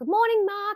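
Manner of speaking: shrill voice, pitched way up, very high. Retelling greeting Mark on set that morning, in a high pitch. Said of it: "in this like high pitch".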